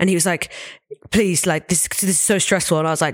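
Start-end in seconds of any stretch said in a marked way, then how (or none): 1.1-2.8 put-on anxious, nervous, fretful old man voice. Retelling an old man's words during a stressful penalty shootout: imitating a nervous old man. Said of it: "this adorable old man".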